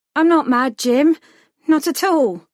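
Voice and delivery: trembling, wavering voice. Narrator reads a character's reply when jim asks if she's mad, shaking voice. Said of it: "Your voice is shaking".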